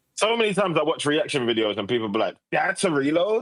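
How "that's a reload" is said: put-on American accent, pitched up. Quoting people in reaction videos, doing an american accent. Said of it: "I don't know why I did an American accent".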